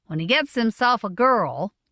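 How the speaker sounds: ordinary delivery, nothing marked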